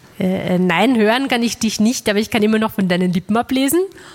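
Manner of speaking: ordinary talk, nothing marked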